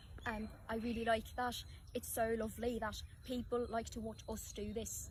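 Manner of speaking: very soft, hushed, quiet Irish accent. Playing an accent game, answering in the called-out accent: Irish accent.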